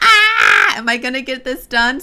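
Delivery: wild, high, loud, careening, swooping scream. Quoting own deadline worry, screaming. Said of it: "Sorry for screaming".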